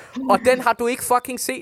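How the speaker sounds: shrill, loud yelling shout. Speaker telling the listener they have not seen the film, shouting. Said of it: "Undskyld, jeg råber".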